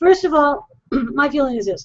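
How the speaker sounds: hoarse, choked-up voice. Answering the other speaker's worry, the speaker starts giving their view with a frog in the throat. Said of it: "I'm choked up with frogs in my voice".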